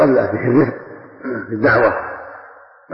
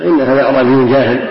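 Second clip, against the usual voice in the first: ordinary talk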